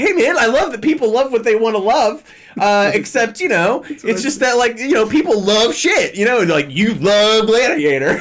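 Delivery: condescending know-it-all voice. Mocking the other speaker's expected reply: imitating someone being condescending. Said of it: "the condescending sentence to drop where you're like".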